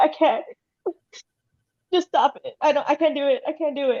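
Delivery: high, sobbing crying voice. Retelling a friend's first bikini wax, imitating her crying. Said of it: "she started crying".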